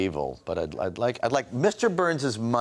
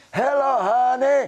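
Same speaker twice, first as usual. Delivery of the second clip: put-on very high grandmotherly voice; 7 dB louder than usual. Retelling scaring his mother by copying his grandmother's voice: imitating his grandmother's voice. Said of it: "and I'd say".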